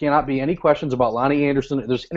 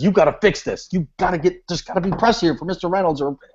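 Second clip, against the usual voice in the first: mock angry flustered voice, higher; 4 semitones higher than usual. Retelling how the boss demanded press coverage: imitating a mad, flustered boss. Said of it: "she's all in a tizzy and really mad".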